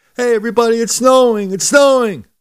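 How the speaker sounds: gleeful excited yell, very high and loud. Speaker acts out throwing a window open and yelling out like Scrooge. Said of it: "start yelling out like Scrooge".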